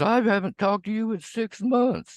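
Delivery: high, whiny, mocking imitation of a voice. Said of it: "She goes".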